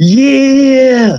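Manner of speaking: very high, loud, happy screaming yell. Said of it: "he's, like, screaming. He's so happy".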